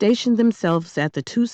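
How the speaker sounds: ordinary delivery, nothing marked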